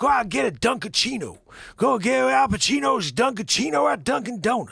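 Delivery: gravelly, very high-pitched and loud. Joking that people now know Al Pacino only from ads, gravelly Al Pacino voice. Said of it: "it's his like stupid gravelly voice thing".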